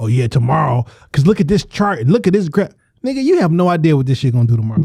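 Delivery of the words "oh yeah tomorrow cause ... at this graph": mocking, sent-up know-it-all authority tone. Mocking someone who acts like the authority on crypto: mocking self-proclaimed authority tone. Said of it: "like you the fucking authority".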